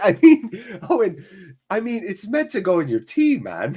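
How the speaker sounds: put-on loose Irish-flavored accent. Quoting a comment from Owen in a vaguely Irish accent. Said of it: "an okay impression of you".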